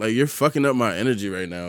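ordinary talk, nothing marked

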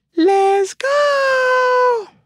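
"go" very high, loud, and stretched out. Starting the next segment, doing a Megan Penn impersonation. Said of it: "that's my Megan Penn impersonation".

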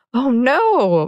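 giggling, high giggly "oh", drawn-out "no". Teased about the hawk, she answers into her friend's ear: giggling. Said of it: "Madison giggled in her ear".

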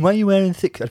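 strange, very high, critical, judging put-on voice. Retelling a critique given about a contestant's look, imitating Michelle's voice. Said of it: "Why is she talking in that voice?".

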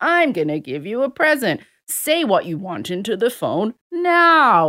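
swooping sing-song, drawn out and stretched. Retelling a phone recording that talks to a kid: Santa Claus voice. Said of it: "and it's like".

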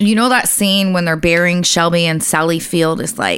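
ordinary talk, nothing marked

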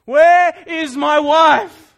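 booming, very loud, very slow, drawn-out terrified scream. Narrator voicing a man gripped by terror, calling out for his wife, screaming. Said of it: "he screamed".

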